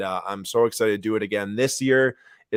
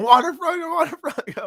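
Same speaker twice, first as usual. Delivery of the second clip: very high, elated, excited screaming. Retelling screaming in a hotel room over a card pull: imitating own screaming. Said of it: "I'm screaming in this hotel room".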